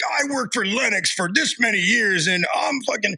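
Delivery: mock yelling in a man's voice. Retelling a guy who walked up during a refrigerant chat, imitating someone yelling. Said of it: "like yelling".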